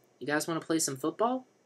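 bright, cheerful, upbeat voice. Denny runs up to the two older men with the football: cheerful question. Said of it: "He asked cheerfully".

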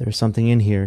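plain

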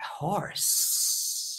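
breathy, whispered, snakelike hiss. The speaker demonstrates the kids' repetition game: saying it like a snake. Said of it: "Or say it like a snake".

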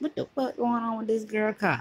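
ordinary talk

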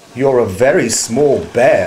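ordinary delivery, nothing marked

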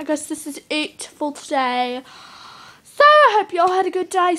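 British English accent. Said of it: "Sorry about my British accent".

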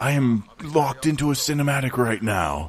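hushed whisper. Streamer stuck in a game cinematic, whispering so the Japanese can't hear. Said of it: "And I'm whispering so the Japanese can't hear me".

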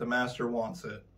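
ordinary delivery

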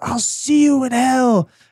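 high, drawn-out, screaming demonic voice. Recapping the first minutes of a movie, imitating a demon screaming. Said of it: "it's like screaming".

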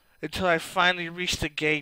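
ordinary delivery

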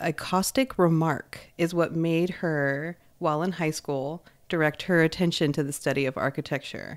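ordinary delivery

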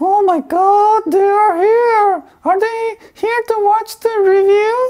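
shrill, very high ventriloquist dummy puppet voice. Doing a ventriloquist act for viewers, the puppet answers in a ventriloquist puppet voice. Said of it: "It's the gimbal ventriloquist".

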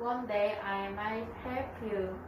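plain reading voice

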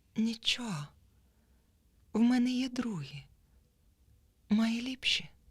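soothing, even, mild, gentle, slightly high. A bent girl answers the boy who threw her things in the water, calm and gentle. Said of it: "спокійно сказала".

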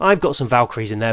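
plain

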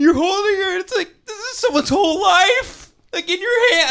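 mock crying and babbling. Retelling what they said to her while crying, retelling crying and babbling. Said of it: "I'm like crying and I'm saying the most Hallmark bullshit".

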